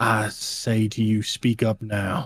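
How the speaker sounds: grinning, menacing, smiling tone. Voicing a leader who dares the crowd to object: grinning, menacing challenge. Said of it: "give this grinning smile as he shakes his head".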